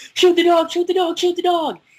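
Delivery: play-acted very high, loud, frantic panicked yelling. Retelling playing Resident Evil when a zombie dog breaks through the window, imitating a panicked shout. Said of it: "freaking out and panicking".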